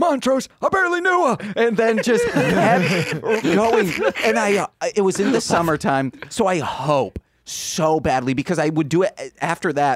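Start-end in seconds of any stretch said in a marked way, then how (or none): 0.0-1.4 mock very high-pitched screaming yell. Recalling closing up near 1 a.m., the speaker re-enacts screaming at a sign: retelling a scream. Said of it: "and I just scream".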